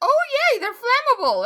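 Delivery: very high, loud, giddy, delighted little cheer. Voicing a character who claps as a creature catches fire: giddy, in character. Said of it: "Inara claps a little giddily".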